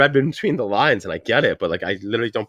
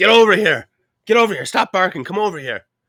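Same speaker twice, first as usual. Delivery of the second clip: put-on hollering, raised and pitched-up; 8 semitones higher than usual. Retelling calling the dogs over in the backyard at night, retelling yelling at dogs. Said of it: "I'm yelling at the dogs".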